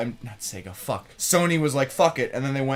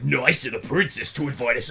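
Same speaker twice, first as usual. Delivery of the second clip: gruff Brooklyn man voice. Describing a game's opening cutscene, quoting the meme line in a gruff Mario voice. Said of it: "his voice is like a gruff Italian man".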